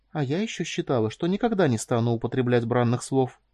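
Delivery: ordinary delivery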